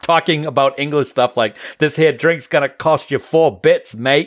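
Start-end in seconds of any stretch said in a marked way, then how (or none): 1.8-4.3 fake, put-on Australian accent. Retelling a video made with a cousin: imitating own put-on Australian accent. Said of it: "I did the whole thing as an Australian".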